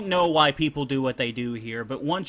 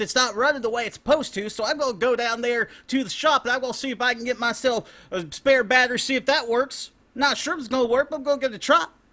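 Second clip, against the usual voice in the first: put-on West Virginian man's accent, pitched very high; 10 semitones higher than usual. Performing a bit for the others, the speaker talks in a West Virginian accent. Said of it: "There is the West Virginian man you just heard".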